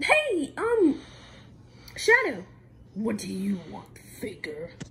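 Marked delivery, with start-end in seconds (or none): 2.9-4.7 very deep, low voice. Playing Shadow who answers someone in a skit: deep Shadow voice. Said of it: "you have a very good voice. It's very deep".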